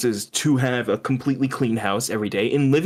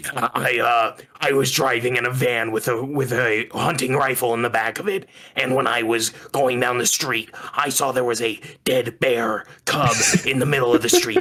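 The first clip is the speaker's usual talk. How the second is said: put-on, strained politician voice. Retelling a politician's interview anecdote the way he really talks, RFK impression. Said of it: "this is how he talks".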